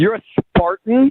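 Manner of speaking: loud, disdainful, contemptuous disbelief. Learning on the phone that a date is a rival: disdainful. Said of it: "There is so much disdain in your voice right now".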